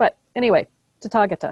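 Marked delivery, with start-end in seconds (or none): 1.0-1.5 tathagata said with stress on the second syllable. Explaining where the accent falls: tathagata stressed on second syllable. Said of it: "ta, which is stressed. That's where the accent is".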